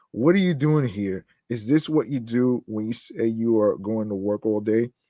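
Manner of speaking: ordinary talk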